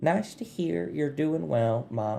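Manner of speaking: put-on soft Southern accent. Voicing Nora answering Mop's Sending spell: Nora's soft Southern voice. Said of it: "it's soft and southern".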